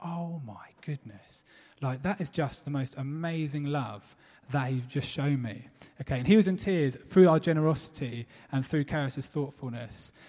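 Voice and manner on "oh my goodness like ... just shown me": put-on welling-up, tearful voice, quieter. Retelling a man's reaction to a gift of diabetic jam, imitating him welling up. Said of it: "And he just sort of welling up".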